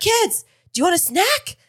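mock very high-pitched, shrill yell. Teasing Chris about yelling at the kids from the chair, imitating Chris yelling. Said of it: "Like yelling".

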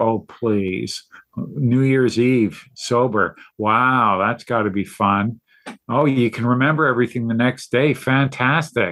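imitated sarcastic tone. Retelling past remarks about being sober, imitating own past sarcasm. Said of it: "I was just sarcastic about it".

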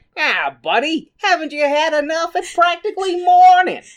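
put-on loud, very high American accent. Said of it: "we suddenly have an American accent".

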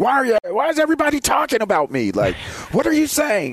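acted, very high, swooping, nervous paranoid breakdown. Imagining a player amid whispering teammates, imitating Baker Mayfield's nervous breakdown. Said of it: "he has that nervous breakdown, like".

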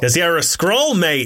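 put-on Australian accent. Right after being told they are bad at this: put-on Australian accent. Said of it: "That was my Australian dialect".

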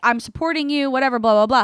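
ordinary talk

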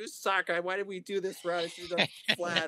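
acted high yell, as if from far behind. Retelling a wife yelling from way back on an uphill route: imitating wife yelling. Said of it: "I can hear my wife yelling at me".

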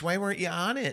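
put-on Minnesota accent. Retelling a mom asking about a comedy show: imitating mom's Minnesota accent. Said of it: "my mom is the quintessential Minnesota".

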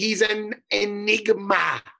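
cartoon supervillain voice. Making a fight pick by decision, the speaker says it in a Dr. Evil voice. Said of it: "Say it like Dr. Evil".

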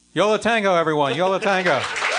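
high, loud stadium-emcee announcer call.

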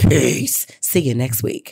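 put-on deep, slow voice. Sign off your podcast to the listeners until next week in your deepest Pam voice. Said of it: "in my deepest Pam voice".

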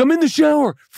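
frantic, freaked-out, high, panicked voice. Retelling a roommate's reply through a locked door: imitating someone freaking out. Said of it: "freaking out".

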